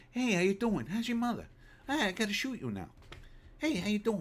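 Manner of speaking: very high movie-star voice. Mocking an actor's voice while ruling him out of a cowboy role: Mark Wahlberg impression. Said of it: "He's got the look, but his voice, man".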